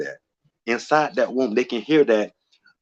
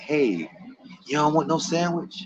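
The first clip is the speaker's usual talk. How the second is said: undemanding, soft, high whisper; 6 semitones higher, 5 dB quieter than usual. Retelling the voice in his head back then, whispering like his roommate. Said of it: "whisper like my roommate".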